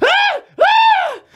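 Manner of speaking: very high, loud, wordless excited shrieks and yells. Reenacting a reaction to a tweet, imitating own excited yell. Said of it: "I literally yelled like that".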